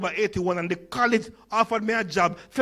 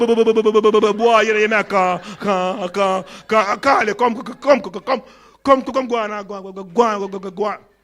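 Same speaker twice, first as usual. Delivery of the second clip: put-on heavy stutter, severe repetitions, drawn-out boy voice; 5 dB louder than usual. Recalling how his father talked, imitating father's severe stutter. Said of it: "My father had a very severe stutter".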